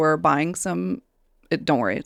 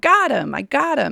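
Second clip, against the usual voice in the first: mock hollering, high, drawn-out, rasping; 8 semitones higher than usual. Describing a woman yelling in the background, imitating her yelling. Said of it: "she's just in the background yelling".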